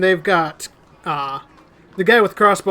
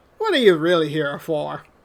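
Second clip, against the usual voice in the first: put-on American Southern US accent. Game master voicing a man at a table in the scene, southern accent. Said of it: "says the man with the southern accent".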